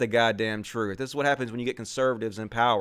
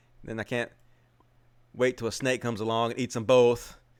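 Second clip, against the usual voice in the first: ordinary delivery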